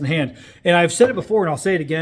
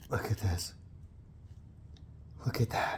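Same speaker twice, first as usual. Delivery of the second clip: breathy whisper, almost no voice; 7 semitones lower, 17 dB quieter than usual. Showing a curl to viewers, the speaker is whispering. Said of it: "I'm whispering".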